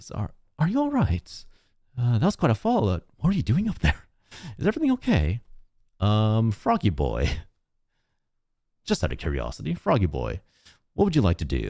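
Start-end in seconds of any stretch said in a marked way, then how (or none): 0.1-5.4 put-on very high, swooping young woman voice. Voicing a young woman who asks a fallen player character if they're all right: voicing a young woman. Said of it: "a young woman, uh, says".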